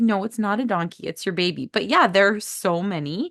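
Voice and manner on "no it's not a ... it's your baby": usual speaking voice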